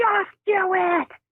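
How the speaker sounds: very high, top-of-the-lungs shriek. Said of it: "Screaming at the top of her lungs".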